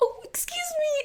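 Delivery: mock, very high, sweet butter-wouldn't-melt innocence. Retelling a classmate's apology in class: imitating an innocent tone. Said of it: "It sounds like an innocent".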